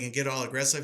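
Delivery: ordinary delivery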